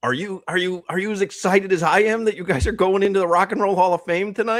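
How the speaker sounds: put-on very high, thrilled, excited fan-girl screaming. Retelling a reporter's question to a band at their Hall of Fame induction, imitating a screaming reporter. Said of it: "She was screaming".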